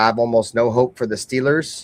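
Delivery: plain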